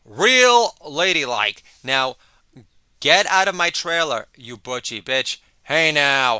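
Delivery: booming, very loud, ripping scolding tirade. Doing an impression of an actor ripping a co-star: Jeffrey Tambor impression. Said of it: "my impersonation of Jeffrey Tambor ripping his fellow".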